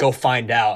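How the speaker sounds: put-on menacing, threatening tone. Retelling what an angry man told the speaker to do: imitating a menacing tone.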